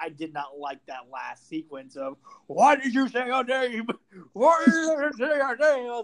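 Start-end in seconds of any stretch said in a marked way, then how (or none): 2.5-5.9 very high, very loud, repeated screaming. Retelling a movie scene in a Batman voice: imitating screaming Batman. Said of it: "this fucking screaming Batman shit".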